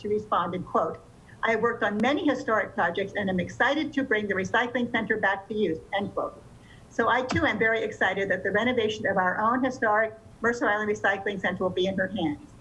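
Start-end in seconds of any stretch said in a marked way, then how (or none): none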